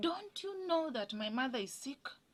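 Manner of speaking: mock, high-pitched shouted outburst. Recalling a time the speaker shouted at their mother, retelling a shout. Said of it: "I shouted at my mother".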